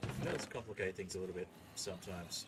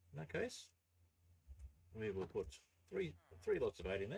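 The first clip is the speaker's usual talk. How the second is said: talking with a full mouth, chewing; 3 semitones higher than usual. Eating breakfast while narrating, talking with a mouthful. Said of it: "I've got a mouthful of toast".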